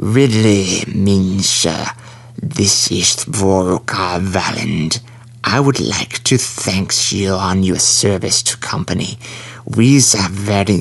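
very slow hissing and lisping, dragging every word. Narrator reads the admin on the comm speaker: Volker Valand's lisping hiss. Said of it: "The voice lisped and hissed".

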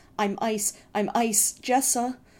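trembling, drawn-out voice. The brother, clutching the narrator, speaks into the narrator's hair, voice shaking. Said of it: "his voice shaking".

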